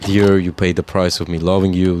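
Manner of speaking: usual speaking voice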